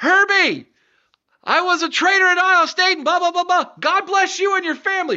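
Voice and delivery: very high, hollered shout carrying far. Retelling what a man yelled out toward the stage, retelling a yell. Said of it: "he yells out".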